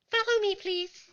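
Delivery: minuscule, squeaky, very high tiny voice. After the door slowly opens, a voice speaks to the visitors: teeny tiny voice. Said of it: "the teeny tiny voice says".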